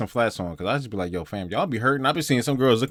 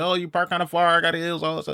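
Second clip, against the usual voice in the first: irritated woman grumbling, pitched up; 5 semitones higher than usual. Imitating a woman complaining about a far parking spot: imitating an annoyed woman. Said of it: "kinda being annoyed".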